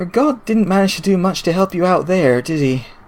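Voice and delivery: soft, calm, relaxed, unhurried, easy-going voice. A voice speaks into the listener's ear: calm, relaxed voice. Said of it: "a calm, relaxed voice uh, sounds in your in your ear".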